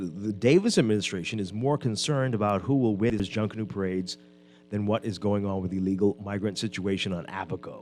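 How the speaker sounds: ordinary delivery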